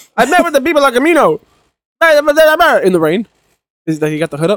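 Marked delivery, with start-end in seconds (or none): 0.2-3.3 very high, slow, faraway 1940s gangster voice. Speaker quoting a movie character's line, in a faraway 1940s gangster voice. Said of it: "you sound like a 1940s gangster, but like really far away".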